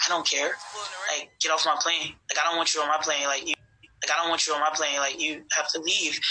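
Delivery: normal talking voice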